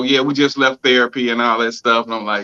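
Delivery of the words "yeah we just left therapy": ordinary talk, nothing marked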